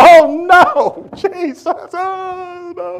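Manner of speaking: very high, very loud drawn-out wail, long oh. A speaker retells his flesh resisting giving something up: retelling a scream. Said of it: "My flesh was screaming like".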